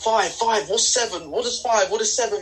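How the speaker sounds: acted-out, unhinged, out-of-control, high, delirious shouting. Retelling an ayahuasca trip, imitating own past shouting. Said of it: "I was literally shouting".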